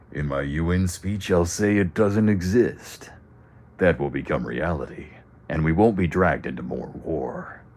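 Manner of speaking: gruff, smoky soldier voice. Speaker redoing a character's line as it should have sounded, in a gruff Solid Snake-like voice. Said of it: "Kind of sounds like a Solid Snake if he smoked even more".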